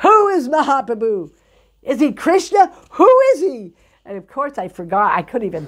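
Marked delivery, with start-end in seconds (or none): 0.0-3.7 loud, high-pitched, demanding yelling. Retelling being questioned at the top of the stairs: imitating someone yelling. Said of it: "he starts yelling".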